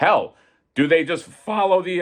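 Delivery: breaking, cracked voice, cracking up high. Thinking aloud mid-ramble when the voice cracks. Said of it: "why did my voice crack?".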